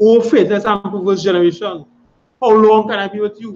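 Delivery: play-acted stern, furious, militant tone, high pitched. Reading a scripture line as Yahushua would speak it: angry, militant Yahushua voice. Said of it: "speaking out in, in a militant way".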